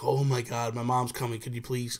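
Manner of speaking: ordinary talk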